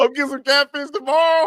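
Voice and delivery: mocking imitation, squeaked back very high.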